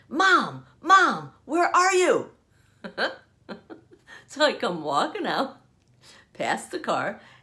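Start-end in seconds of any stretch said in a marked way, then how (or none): 0.1-2.3 put-on alarmed, panicked call, high and drawn-out. Retelling a story, imitating a daughter calling out for her mom, a panicked call. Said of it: "I hear my daughter's panicked voice".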